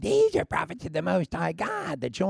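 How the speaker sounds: strange ventriloquist-style voice. Retelling what a possessed girl kept crying out, in her ventriloquial voice. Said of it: "she had a ventriloquial voice".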